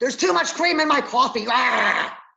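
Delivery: sudden, high, loud, raging angry outburst. Acting out a patient flying off the handle over little: imitating a patient in a roid rage. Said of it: "They will fly off the handle for very little".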